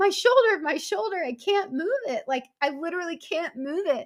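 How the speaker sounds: high-pitched crying and screaming. Recounting a shoulder injury that hurt badly, retelling crying and screaming. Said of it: "you're like crying and screaming at the same time".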